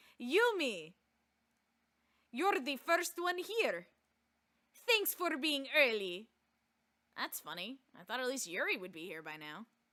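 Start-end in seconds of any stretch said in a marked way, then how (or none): 0.2-6.3 put-on slow, deliberate Russian accent. Voicing Monica greeting the first arrival, Monica in a Russian accent. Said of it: "Everybody's Russian".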